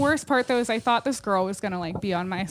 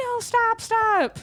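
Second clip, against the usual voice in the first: mock screaming, much higher in pitch; 13 semitones higher, 3 dB louder than usual. Retelling a woman's reaction when a man turned a gun on himself, retelling a scream. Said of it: "she's like screaming".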